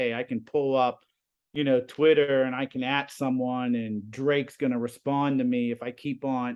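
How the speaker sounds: ordinary talk, nothing marked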